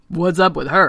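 croaky, croaking frog-like voice. Reading a story aloud, the frog points at the princess: Ken the Big Frog croaking. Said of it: "croaked Ken the Big Frog".

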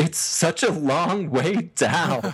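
play-acted high, tearful voice, welling up mid-sentence. Retelling what a man said on a video, imitating someone tearing up. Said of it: "tearing up".

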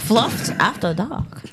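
vague, Swedish-like accent. Announcing the segment name to chat, in an odd Swedish-sounding accent. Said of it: "I don't know what that accent was".

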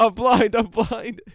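put-on, very high, very slow drawn-out wailing scream. Retelling a prank where a blind man gets grabbed: imitating someone screaming. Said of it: "he keeps screaming".

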